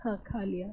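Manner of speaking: soft mumbled voice.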